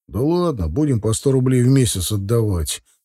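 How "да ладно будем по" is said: usual speaking voice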